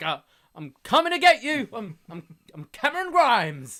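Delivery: very loud, high, scared tough talk, stammering with fright. Retelling a terrified wrestler trying to be tough: imitating a terrified Cameron Grimes acting tough. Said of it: "He's clearly terrified, but he's like".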